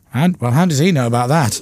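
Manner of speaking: normal talking voice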